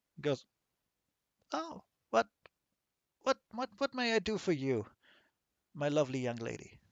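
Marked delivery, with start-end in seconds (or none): 1.6-6.7 put-on quieter old man character voice. Game master voices a man greeting the player's character, in a very old man voice. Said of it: "he's very small and very old".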